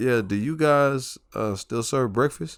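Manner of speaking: small, timid, hesitant voice. Retelling asking a drive-thru worker about breakfast: imitating own timid voice. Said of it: "I'm timidly saying".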